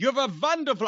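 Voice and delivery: jokey, comic put-on German accent. A host announces he'll be German today and praises Brian, in a Colonel Klink German accent. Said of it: "I'm going to be German today".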